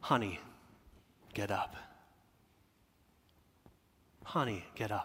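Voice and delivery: very quiet, tender, soft, warm near-whisper. Showing how a parent might gently wake a child: warm, tender wake-up call. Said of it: "such a warm".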